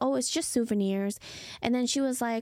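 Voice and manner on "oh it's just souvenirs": plain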